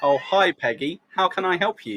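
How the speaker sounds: role-played, unhurried, calm receptionist voice. Role-playing a phone call, answering as the newspaper: playing a Daily Mirror phone answerer. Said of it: "Let's role play".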